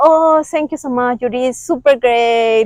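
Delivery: play-acted, condescending, patronizing pat-on-the-head tone. Describing how people praise someone struggling with english: imitating condescending praise. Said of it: "the meaning of this kind of condescendence".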